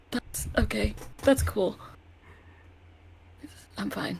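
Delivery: very quiet muttering to self. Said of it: "She's just very quietly to herself".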